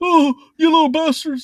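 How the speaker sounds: very high, loud, squeezed-out scolding. Listing cartoon impressions he can do, then doing the Principal McVicker voice. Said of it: "that's Principal McVicker".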